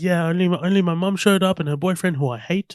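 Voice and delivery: put-on New Zealand accent. Quoting a character's joke, the speaker does a Taika Waititi Kiwi voice. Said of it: "he is very Kiwi".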